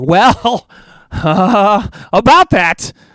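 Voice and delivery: put-on, sarcastic, ironic delivery. Speaker reacting to predictions of a one-month absence, in a sarcastic voice. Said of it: "I love that voice you just did".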